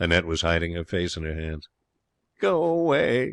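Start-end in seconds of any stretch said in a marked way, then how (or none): 2.4-3.3 faint, weak, barely there, slightly high. Narrator reading Annette's reply, faint voice. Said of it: "she said faintly".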